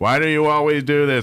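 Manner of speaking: deadpan, flat, level monotone with no inflection. Imitating an online veteran who always talks in a monotone. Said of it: "he always talks in this monotone".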